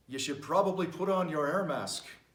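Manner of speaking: put-on speaking in an Irish accent. Acting out a pilot on a plane announcing trouble: Irish accent. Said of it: "why he has an Irish accent".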